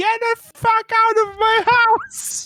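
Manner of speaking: screeching. Voicing the bookkeeper ordering two intruders out: screeching. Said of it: "and just screeches".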